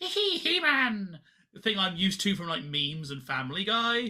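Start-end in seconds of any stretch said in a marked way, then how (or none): 0.0-1.2 squeaky, very high-pitched cartoon-villain giggle. Describing the familiar meme version of a villain: high-pitched Skeletor voice. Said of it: "really high-pitched".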